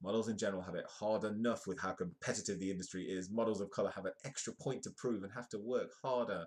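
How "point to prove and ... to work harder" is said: ordinary talk, nothing marked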